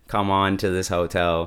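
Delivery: ordinary talk, nothing marked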